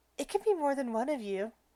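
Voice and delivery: soft, half-whispered aside. A character leans over and half-whispers so only Jasper hears: half-whispering. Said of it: "she lean- leans over and whispers".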